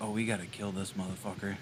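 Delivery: very low, hushed half-whisper. A player half-whispers to whoever is nearest in the party, half-whispering. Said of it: "I'm gonna whisper to whoever's nearest".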